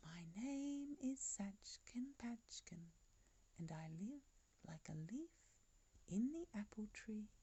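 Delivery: clear, sweet voice. Voice from the trembling tree speaks to the farmer and his men, clear sweet voice. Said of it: "clear, sweet voice again".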